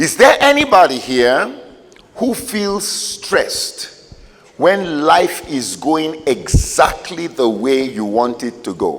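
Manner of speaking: slow, deliberate, each word spelled out carefully. A speaker repeats his question to the audience, speaking slowly. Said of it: "let me say that slowly".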